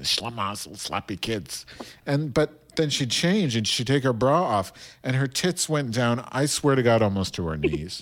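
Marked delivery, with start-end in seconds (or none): 0.0-1.7 quiet, grumbling grandmother mutter. Retelling how a grandmother talked to herself loudly: imitating grandmother muttering to herself. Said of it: "she'd be like".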